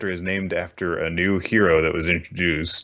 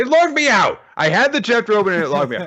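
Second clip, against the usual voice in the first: really angry, very loud, very high-pitched outburst; 5 dB louder than usual. Telling Chris the site keeps logging them out, very angry. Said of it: "I'm very angry about this".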